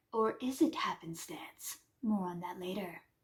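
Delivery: very quiet, low, hushed, ominous, sinister undertone. Recapping a story about Ferris and Cameron, teasing a theory, in a sinister voice. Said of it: "Sinister voice".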